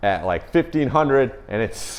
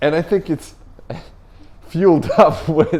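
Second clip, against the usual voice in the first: talking through giggles, laughing, pitched up; 5 semitones higher than usual. Translating a Russian remark into English, laughing while talking. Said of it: "Sorry for laughing".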